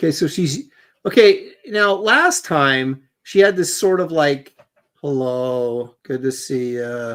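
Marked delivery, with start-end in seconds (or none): 5.0-7.2 mock insincere, halfhearted, lower, slower. Describing how a woman greeted her last time, imitating an insincere greeting. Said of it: "just felt really like kind of".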